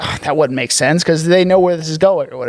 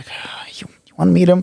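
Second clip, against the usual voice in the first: put-on grudging, reluctant, half-hearted delivery; 2 semitones higher than usual. Retelling a show scene, imitating a begrudging tone. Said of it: "begrudgingly, he's like".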